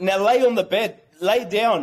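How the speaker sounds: plain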